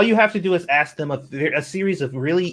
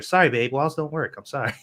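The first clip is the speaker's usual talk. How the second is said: ordinary talk, nothing marked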